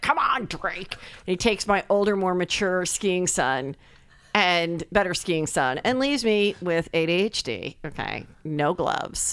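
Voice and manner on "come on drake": irritated, fed-up, annoyed tone. Retelling him kicking the suitcases during the argument over gloves, mock-annoyed. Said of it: "He's all annoyed".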